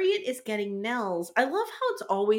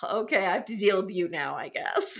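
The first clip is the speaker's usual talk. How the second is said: put-on eye-rolling voice, lower pitch; 3 semitones lower than usual. Recapping a show scene, the speaker voices Marco, imitating Marco's eye-roll. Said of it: "rolls his eyes and is like".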